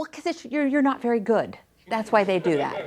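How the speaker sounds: mock sarcastic delivery. Retelling what a teenage daughter said: imitating sarcastic daughter. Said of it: "prone to sarcasm".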